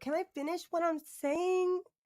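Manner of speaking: put-on very high, whiny little-girl voice. Mocking a panelist's question: imitating a whiny little-girl voice. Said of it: "she sounds like a little girl".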